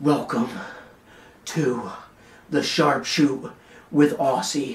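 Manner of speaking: slow wrestling ring announcer mic voice. Showing how the show would sound if delivered like Roman Reigns. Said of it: "I talked like this the entire time".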